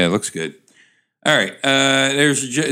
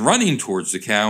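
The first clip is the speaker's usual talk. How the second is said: ordinary talk, nothing marked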